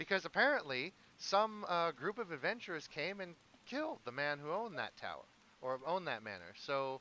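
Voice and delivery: high piping voice. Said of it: "Merrick kinda pipes up".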